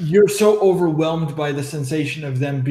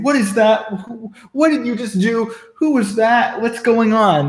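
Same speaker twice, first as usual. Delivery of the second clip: furious, demanding, high, angry yelling; 6 semitones higher than usual. Describing a game character pointing at a torn cloak, yelling at you. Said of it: "Like he's like yelling at you".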